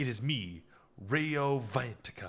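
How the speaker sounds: campy, overly dramatic, very slow, drawn out. Recapping an episode, quoting how the character announces himself: mock-dramatic Rao Vantika line. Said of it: "a little bit too dramatic here".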